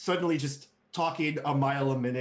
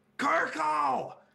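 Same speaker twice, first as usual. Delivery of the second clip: very high, angry, outraged shriek; 13 semitones higher than usual.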